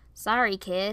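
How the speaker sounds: ordinary delivery, nothing marked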